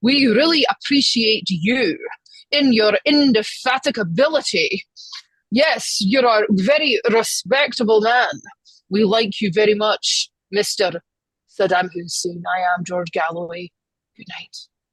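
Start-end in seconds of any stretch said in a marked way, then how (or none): 0.0-12.4 heavy, overdone, exaggerated, very Scottish accent. Quoting what George Galloway said, George Galloway impression in very Scottish accent. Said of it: "in his very Scottish accent. He goes".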